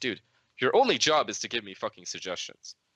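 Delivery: fed-up, blunt, rude, frustrated retort. Speaker retells snapping at another player after losing a match, retelling his own rude outburst. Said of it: "I kind of said it in a kind of rude way".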